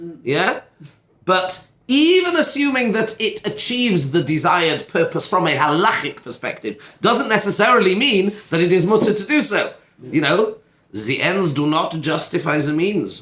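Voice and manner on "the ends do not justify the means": put-on German-accented delivery. Discussing a halachic question with a listener, dropping into a German accent. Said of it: "that sounds better in a German accent".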